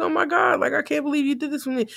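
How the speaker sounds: mock tearful, high, emotional crying voice. Retelling a reaction to a car gift from a wife: imitating someone crying.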